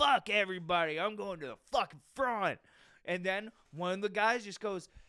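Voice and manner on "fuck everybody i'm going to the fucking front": put-on yelling in a hard man's voice. Retelling a line-cutter at a food counter: imitating a man yelling. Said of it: "He's yelling".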